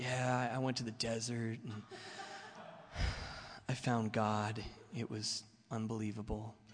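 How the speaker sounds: quiet, really soft-spoken, spiritual-sounding talk. Acting out their past self sharing a spiritual story, soft-spoken voice. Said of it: "I'm talking really soft-spoken".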